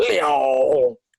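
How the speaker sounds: long, slow, stretched-out, drawn-out delivery. Showing the others an impression, shouting a name: Natalie Portman impression. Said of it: "That whole movie, she's like".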